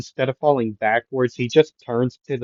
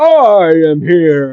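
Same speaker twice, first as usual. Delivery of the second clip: huge, very loud, booming, swooping shout; 5 semitones higher, 9 dB louder than usual. As the sledgeman keeps grabbing at someone, a voice arrives: booming All Might voice. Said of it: "you hear a booming voice".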